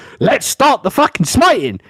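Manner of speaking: bravado-filled yell. Retelling a street argument with a ranting man: retelling own shouting. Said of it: "now I'm shouting with this guy".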